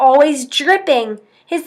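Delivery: ordinary delivery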